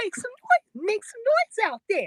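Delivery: very high, loud, swooping emcee crowd-hype call. Asked to do it in Denise's voice, the speaker obliges, imitating Denise's voice. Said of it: "Do that in the Denise uh, voice".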